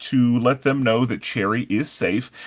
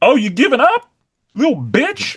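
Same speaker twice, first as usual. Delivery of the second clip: put-on taunting voice, higher and louder; 11 semitones higher, 5 dB louder than usual. Retelling what a coach says to a fighter taking a breather: imitating the coach. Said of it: "the coach is like".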